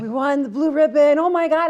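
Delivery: loud, high, mock overjoyed shrieking. Retelling running to the PA after learning the school won: imitating own screaming. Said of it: "And I'm screaming".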